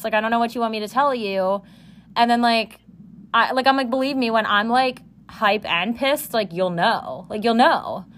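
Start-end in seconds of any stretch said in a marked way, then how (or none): none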